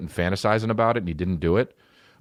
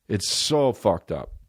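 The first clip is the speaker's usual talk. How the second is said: plain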